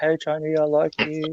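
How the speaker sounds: put-on soft, high-pitched girly voice. Retelling putting on a voice to get a guy's interest, in a girly voice. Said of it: "in a girly voice".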